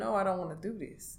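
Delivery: put-on crying voice. Retelling what was said to him while crying: retelling a tearful plea. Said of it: "I'm crying. I'm telling him".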